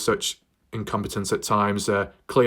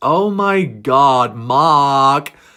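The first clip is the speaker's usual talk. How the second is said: put-on Valley Girl voice, very loud, very slow; 5 semitones higher, 9 dB louder than usual. Comedy section of the speaker's video, done in a valley girl voice. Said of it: "in my Valley Girl voice".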